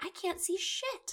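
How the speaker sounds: very high, soft, slow exasperated tone.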